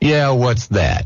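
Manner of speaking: acted guarded, wary, suspicious tone, braced. Retelling how a teacher answered, expecting to be told off: imitating Mister Anderson's suspicious tone. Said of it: "he said it in just that tone".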